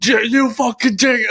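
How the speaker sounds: put-on very high, drawn-out, rowdy drunken yelling. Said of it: "start yelling at us".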